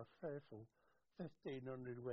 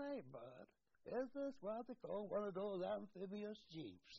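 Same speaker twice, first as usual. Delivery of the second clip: southern American Tennessee drawl; 8 semitones higher than usual. Recalling an American sailor looking at one of the Lancias, in a Southern Tennessee drawl. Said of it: "with a southern, I would say Tennessee bloody drawl".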